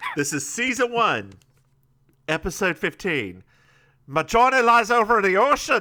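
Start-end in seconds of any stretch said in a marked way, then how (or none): 4.1-5.8 loud, pitched-up, put-on Irish accent. Reading a character's line from season one, episode fifteen, irish accent. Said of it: "Why did you do that in an Irish accent?".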